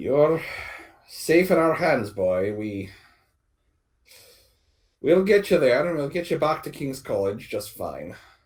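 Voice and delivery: put-on Scottish-accented speech. Voicing a redheaded youth reassuring a boy: good Scots accent. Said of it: "You do a good Scots accent".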